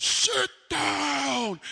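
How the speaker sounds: very loud, very high, shrill, raspy furious scream, dragged down. Acting out screaming at the people two rows ahead, retelling a scream. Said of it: "and I'm screaming at them".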